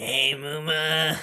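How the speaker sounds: raspy rural Southern voice. Voicing a baddie flirting over a voice changer: redneck smoker voice. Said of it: "Like a mix of a redneck and a smoker".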